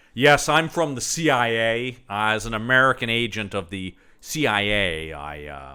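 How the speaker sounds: terrible, atrocious put-on American accent, slow. Discussing a movie, the speaker mimics an actor's atrocious American accent. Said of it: "doing an atrocious uh".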